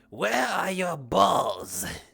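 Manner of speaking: dragonkin creature voice. Imagining how the dragonkin would talk, doing your impression of him. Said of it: "my impression of him".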